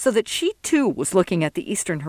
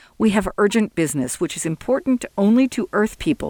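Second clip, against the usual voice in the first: usual speaking voice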